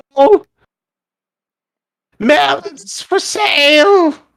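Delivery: shrill, strange voice. Narrating a scene, the storyteller voices a little thing in a dark alley calling out; shrill, odd voice. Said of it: "this sort of a shrill, odd voice calling out".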